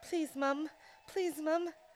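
put-on failed British accent. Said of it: "I can't do a British accent".

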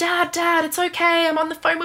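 put-on yelling, high, shrill, pitched way up. Retelling a phone call where a woman yells to her dad, retelling a yell. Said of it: "she starts yelling like".

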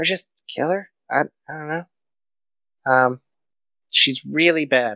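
hushed whisper, in character. Voicing a character who leans in toward Spring: whispering in character. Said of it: "leans in and whispers".

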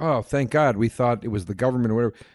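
ordinary delivery

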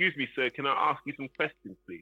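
overly polite, pleading begging tone. Mocking interviewers who ask for questions: imitating a begging interviewer. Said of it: "you have to just beg them".

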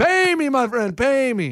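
put-on Saudi accent. Imitating a man rolling in a game, in a put-on foreign accent. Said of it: "What is this accent?".

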